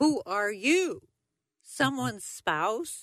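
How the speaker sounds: mock very loud, carrying, high-pitched voice. Recounting a trip to Cuba, a director of Cuban affairs quotes a man's greeting in a very loud voice. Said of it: "he says in a very loud voice".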